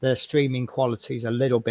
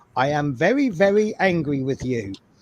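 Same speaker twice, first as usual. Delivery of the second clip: put-on Dutch accent; 3 semitones higher than usual. Recalling the angriest a Dutch person ever sounded, the speaker quotes them in a Dutch accent. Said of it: "in this Dutch accent".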